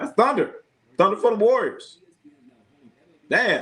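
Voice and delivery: high voice on the verge of tears. Speaker retelling meeting someone, on the verge of tears. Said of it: "You sound like you want to cry".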